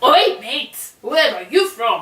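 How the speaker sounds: put-on easygoing, casual delivery in an English accent. Retelling what people in Croydon asked: English accent. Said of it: "they said it in an English accent".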